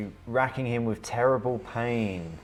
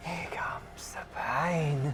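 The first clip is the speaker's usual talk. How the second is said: character whisper, taunting, higher and quieter; 6 semitones higher, 5 dB quieter than usual. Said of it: "I'm gonna whisper you something".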